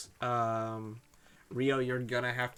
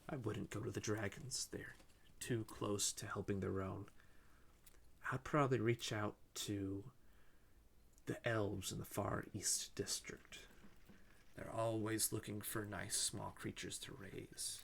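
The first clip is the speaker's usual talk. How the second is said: quiet whisper, quieter; 3 semitones lower, 10 dB quieter than usual. Voicing the checker, who whispers to a player so others can't hear: whispering in character. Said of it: "He starts whispering to you".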